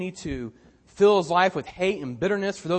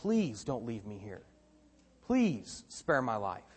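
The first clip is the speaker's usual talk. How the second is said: mock desperate pleading, lower, quieter; 7 semitones lower, 9 dB quieter than usual. Retelling a man's words as his brothers throw him in a pit, acting out desperate begging. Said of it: "as he's begging".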